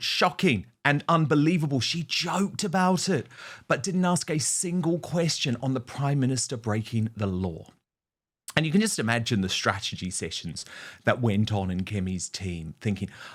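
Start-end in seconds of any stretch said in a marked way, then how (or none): none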